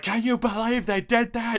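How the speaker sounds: play-acted very high, angry, upset scream. Retelling being upset about a game delay: imitating own childhood screaming. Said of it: "screaming about it".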